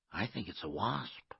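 ordinary delivery

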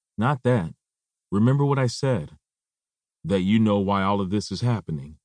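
ordinary delivery

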